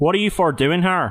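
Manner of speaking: put-on Northern Irish accent. Voicing a character who questions four newcomers: Northern Irish accent. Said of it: "face the Northern Irish voice".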